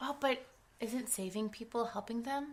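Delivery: soft, mocking tone, dripping with sarcasm.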